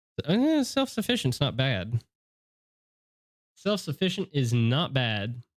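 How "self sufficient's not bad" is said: put-on comedic Southern accent, faster. Checking a Pokemon's ability during a game, in a comedic Southern accent. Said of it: "a very comedic Southern way".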